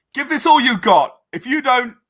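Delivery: high, loud, barked drill sergeant yell.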